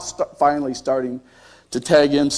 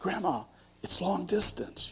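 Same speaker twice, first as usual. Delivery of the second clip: hushed, very soft, very quiet voice; 4 semitones higher, 14 dB quieter than usual. Retelling how someone answering the phone announced a long-distance call: imitating a hushed voice. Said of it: "say in a hushed voice".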